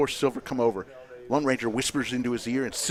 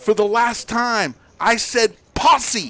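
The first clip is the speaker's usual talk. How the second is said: deliberate, loud, high, drawn-out proclaiming voice; 10 semitones higher, 9 dB louder than usual. Telling a joke of the day, delivering the punchline in a loud voice. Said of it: "in a loud voice".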